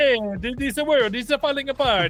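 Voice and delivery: exaggerated, overdone Italian accent. Recalling a bit done with Mike, in a Dino De Laurentiis accent. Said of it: "doing like the most uh, offensive Italian accents you can imagine".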